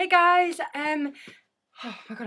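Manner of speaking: out of breath. Greeting viewers right after laying down lots of material: out of breath. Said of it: "I'm out of breath".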